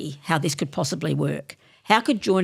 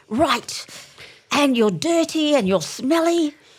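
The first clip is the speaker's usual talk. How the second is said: put-on woman's voice, higher pitch; 9 semitones higher, 4 dB louder than usual. Retelling a speaker's words to women at a field rally: imitating Evangeline Penn's voice. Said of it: "her voice was like".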